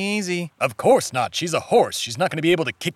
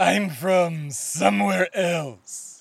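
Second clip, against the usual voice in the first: spooky horror-movie voice. A stranger answers a player's question about his accent, in a Vincent Price voice. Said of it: "Why do you talk like Vincent Price".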